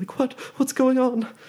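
alarmed, frightened, very high-pitched outburst. A player voicing their character's reaction, acting really scared. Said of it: "really scared".

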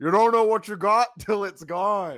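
mock very loud, high, garbled through full mouth. Retelling a backstage segment, quoting a wrestler: imitating Chuck talking with mouth full. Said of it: "with his mouth full".

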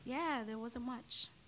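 put-on English accent. An actress improvising an answer about breakfast, in an English accent. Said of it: "Your English accent?".

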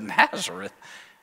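low, condescending scoff.

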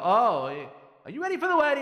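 accusing tone. Showing how a husband might ask a question with a tone: imitating a husband's blaming tone. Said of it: "Like, with a tone".

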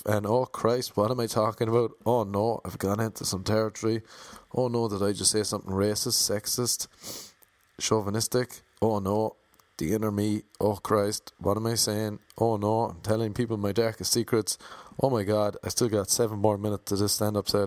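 ordinary talk

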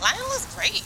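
high-pitched, fake-bright voice. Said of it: "some high-pitched fakeness".

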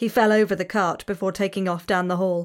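plain reading voice

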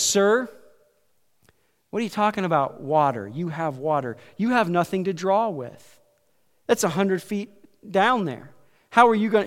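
plain

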